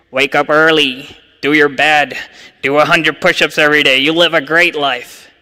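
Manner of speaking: poor put-on Canadian accent. Imagining a first-century rabbi giving life advice, in a bad Jordan Peterson Canadian accent. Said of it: "you can ban me from doing Canadian accents".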